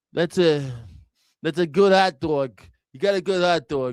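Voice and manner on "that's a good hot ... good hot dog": put-on old-school, old New Yorker accent. Showing how old New Yorkers talk: old New Yorker impression. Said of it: "They always talking like this".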